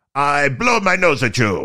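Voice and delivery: put-on slow, swooping, sing-song French accent. Showing the only French accent possible, Monty Python castle guard voice. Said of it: "I can't even do a good French accent unless I'm trying to do the guy in Monty Python".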